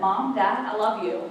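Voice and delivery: ordinary talk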